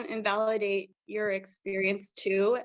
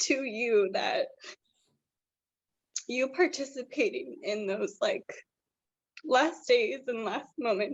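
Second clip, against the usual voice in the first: tearful, near-crying voice. Thanking someone for taking part in his last days; tearful. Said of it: "I'm gonna start crying".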